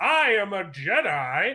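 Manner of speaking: proclaiming, slowly and grandly.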